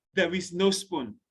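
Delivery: ordinary talk, nothing marked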